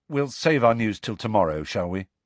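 ordinary delivery

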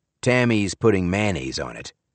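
ordinary delivery

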